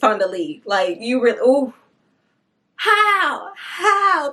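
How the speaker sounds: emotional, choking up, near tears. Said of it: "I'm not about to cry right now".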